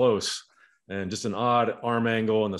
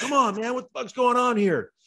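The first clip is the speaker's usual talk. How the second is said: put-on yell in a much higher pitch; 5 semitones higher than usual. Retelling a story about a game, imitating John Kruk yelling. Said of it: "he's like yelling at Benito Santiago".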